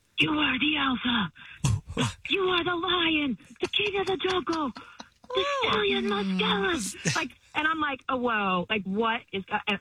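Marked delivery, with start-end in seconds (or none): 0.2-7.2 mock whisper, much higher. Retelling what a man said to the speaker, imitating his whisper. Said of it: "but he was whispering this".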